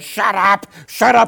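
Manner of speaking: frantic, rough, high screaming, drawn out. Retelling a man running down the hill screaming at him: imitating a frantic scream. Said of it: "he was really freaking out".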